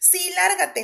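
loud high-pitched shouting. As a visitor turns to leave, someone shouts after him. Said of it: "le gritó [name]".

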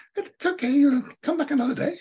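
very high, tiny, bird-like voice. Speaker quoting an interviewee reassuring them after an unusable recording, in a bird-like little voice. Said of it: "in her lovely bird-like little voice".

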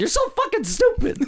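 put-on shrill yell, very high-pitched. Retelling how a mom came around the corner at him, retelling a mom's yell. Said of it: "she's like yelling".

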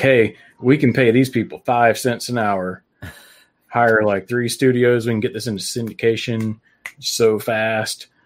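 ordinary delivery

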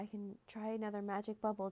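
plain reading voice

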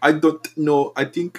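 slow, drawn-out put-on German accent. Retelling what a show character said: Tinka impression in German accent. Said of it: "I'm trying to speak, like, German".

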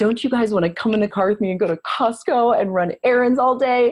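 put-on enthusiasm, high and really excited. Acting out how your sister gets her kids to do boring errands: mock-excited tone. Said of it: "she'll say it with a really exciting tone".

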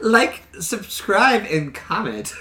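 mocking, high, drawn-out Valley Girl voice. Mimicking how the other speaker said it: mocking Valley Girl voice. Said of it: "He's like a Valley Girl or something".

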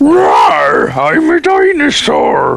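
very slow, rough, swooping, drawn-out dinosaur voice. Talking with co-hosts, offering to do some dinosaur voices: dinosaur voice. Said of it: "I can do some dinosaur voices".

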